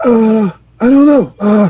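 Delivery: very slow, drawn-out delivery, every word dragged. Answering a question about understanding a coach: Doc Rivers impression. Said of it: "He's doing a Doc Rivers impression".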